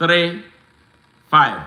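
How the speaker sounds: slow pace. Reading out a contact number so listeners can write it down: slowly. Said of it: "I'm gonna say it slowly".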